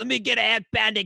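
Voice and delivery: gruff tough-guy gangster voice. Recalling customers at the Italian deli, mimicking one ordering as a Sopranos impression. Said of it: "do his best fucking Sopranos".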